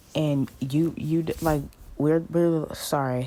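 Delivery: stuttering, tripping over words. Speaking to believers about marriage, stuttering. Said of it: "I'm stuttering".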